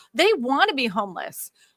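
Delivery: ordinary talk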